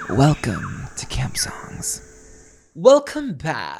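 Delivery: loud, light, slightly creaky vocal fry. A podcast host welcomes listeners back to the show, with a little vocal fry. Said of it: "that was a little vocal fry".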